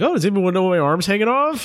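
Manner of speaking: high, showy, attention-seeking voice. Speaker mocking people who walk in wanting attention, imitating an attention seeker. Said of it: "You sound like you're doing a specific impression".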